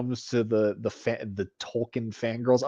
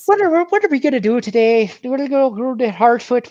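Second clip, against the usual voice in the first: put-on sing-song leprechaun Irish accent, very high, very loud; 13 semitones higher, 10 dB louder than usual. Mocking characters given Irish accents, over-the-top Irish accent. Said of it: "it was giving them over the top Irish a".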